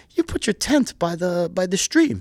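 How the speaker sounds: put-on thick Greek accent. Retelling what a friend said while drinking his coffee, in a heavy Greek accent. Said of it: "my friend with the heavy Greek accent".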